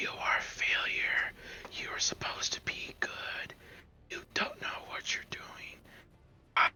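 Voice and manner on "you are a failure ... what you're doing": whispering slowly, lower and quieter. Casting a spell that makes a character hear taunts: slow whisper. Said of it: "I whisper s-, slowly".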